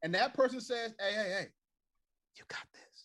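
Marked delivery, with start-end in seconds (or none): 1.0-3.1 gentle, encouraging whisper. Acting out someone you love encouraging you: imitating a whisper.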